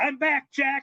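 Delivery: very high-pitched, wild screaming yell. Retelling how Candido lay on the floor: imitating Candido screaming. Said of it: "he's just screaming".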